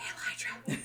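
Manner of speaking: very hushed, barely voiced whisper. Retelling Mom's greeting while shaking hands: imitating a whisper. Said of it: "whispers in your ear".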